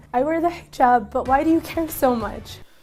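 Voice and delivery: voice sounding about to cry, near tears. Asking a critic why they care that she wears the hijab, sounding about to cry. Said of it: "why do you sound like you're just about to cry?".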